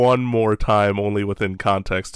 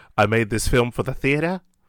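clumsy, terrible put-on Australian accent; 3 semitones higher than usual. Quoting George Miller at a screening, in a terrible Australian accent. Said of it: "As my terrible Australian accent".

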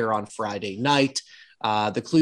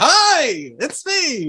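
cheesy delivery, pitched higher; 12 semitones higher, 4 dB louder than usual. Retelling a wrestling segment moment: imitating Sammy's cheesy delivery. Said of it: "this such a cheesy way".

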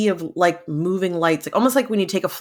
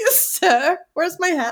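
very high-pitched, silly, put-on British accent; 12 semitones higher than usual. Playing a character in a scene about Gettysburg: British accent. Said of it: "A British accent".

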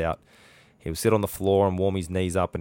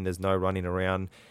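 plain

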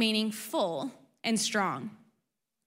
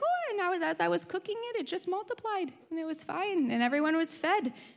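put-on high-pitched, very nonchalant old woman voice. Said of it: "Baba's very nonchalant, like, she's like".

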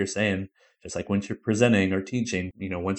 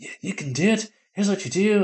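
bad put-on New Zealand accent, very high; 12 semitones higher, 3 dB louder than usual. Retelling what excitable instructors said: terrible New Zealand accent. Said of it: "it's a terrible New Zealand accent".

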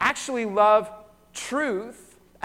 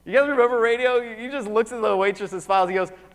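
usual speaking voice

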